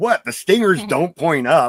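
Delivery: play-acted annoyed dad voice. Retelling what the father said after squashing a scorpion: irritated, imitating Stan. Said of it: "all irritated".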